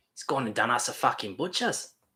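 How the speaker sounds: Australian accent. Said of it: "Aussie accent there for a second".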